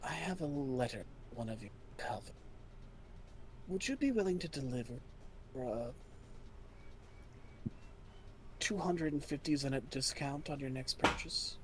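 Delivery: breathy, hushed whisper, very quiet, barely voiced. Voicing the reply from a glowing crystal ball, whispering. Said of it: "he whispers".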